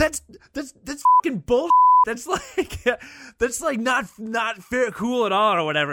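put-on angry yelling. Retelling a friend yelling at the trivia guy over the score, retelling angry yelling. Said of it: "basically just starts yelling at him".

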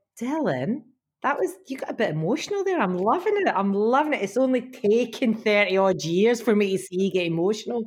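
ordinary delivery

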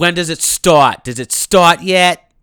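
very loud, rude, demanding yell. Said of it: "Why are you talking like that?".

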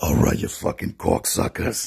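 put-on, deliberately bad, rough, creaky, rasping voice. Greeting the others on the call: worst Joey Diaz impression. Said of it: "that was my worst Joey Diaz impression".

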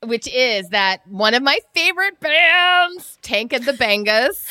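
high, loud, stretched-out "bands". Sharing a favorite band as a podcast pick, in a Target Lady impression. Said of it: "Was that a Vinny voice?".

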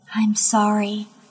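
whispered voice. Reading a story aloud, the narrator apologizes softly: whispering. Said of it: "I whisper".

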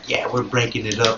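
put-on bragging bro voice. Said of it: "I don't know why that voice has to come out".

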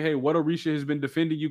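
ordinary talk, nothing marked

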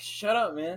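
ordinary delivery

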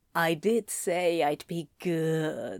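low, slow purr with "good" stretched out. Reading a story aloud, a character answers another character; purring. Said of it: "Anthony purred".

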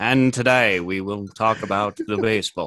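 put-on British BBC broadcaster English accent. Speaking to listeners while a guest is still present, BBC announcer accent. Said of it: "It sounds like BBC now".

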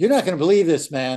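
loud, playful put-on yell. Retelling a golf shot, the speaker re-enacts calling out to Darren: retelling own yell. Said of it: "And I'm yelling at Darren".

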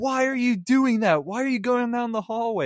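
play-acted, very high, loud yelling near-scream. Retelling watching a horror movie with parents, retelling loud near-screaming. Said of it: "I was saying it so loud".

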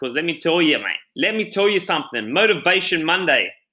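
excited, fired-up, emphatic burst. A podcast host kicks off today's episode to a mate, yelling. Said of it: "sorry for yelling".

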